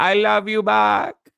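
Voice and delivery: put-on Spanish accent, high and slow.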